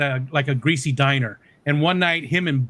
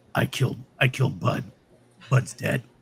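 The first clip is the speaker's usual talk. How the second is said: really gravelly, rough, ground-out voice; 4 semitones lower, 3 dB quieter than usual. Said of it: "he's got this really, really like gravelly voice. Where he's like".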